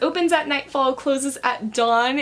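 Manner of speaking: plain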